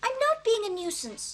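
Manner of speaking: ordinary delivery, nothing marked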